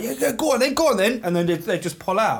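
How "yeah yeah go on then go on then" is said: high, eager, keen tone. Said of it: "when you let a driver out".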